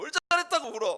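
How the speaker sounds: shrill, very loud scolding tone. Retelling how your mother scolded your crying younger sibling; imitating a mother scolding. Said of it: "이러면서 야단을 치세요".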